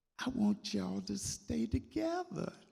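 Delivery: very high, tiny sweet voice, slightly creaky. Retelling own childhood words to a departing father: imitating own small sweet voice. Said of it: "my small, sweet voice saying".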